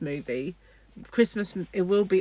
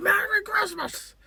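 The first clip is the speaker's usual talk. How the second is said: put-on very high-pitched old-movie star voice. Retelling a movie scene of running through the streets: James Stewart impression. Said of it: "Did you like my impression of James Stewart?".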